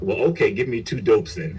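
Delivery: ordinary talk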